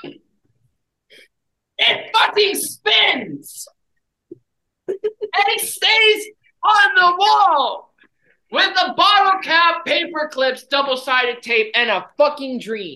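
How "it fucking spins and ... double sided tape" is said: high, loud, slow, proud and excited yell. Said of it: "you sound so proud of yourself".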